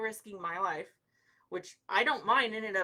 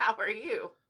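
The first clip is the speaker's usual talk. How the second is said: joking, comic robot voice; 2 semitones higher than usual. Greeting someone who walked in during a live stream, joking: robot voice. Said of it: "I have to talk like a robot".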